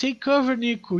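mock shouting. Retelling a mission with a teammate who kept shouting, retelling a shout. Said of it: "Ele ficava gritando assim".

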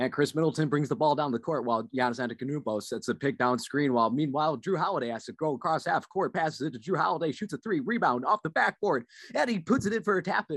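sports announcer, radio play-by-play style. Speaker showing how a basketball game sounds on radio or tv, basketball announcer impression. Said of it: "impressions of that?".

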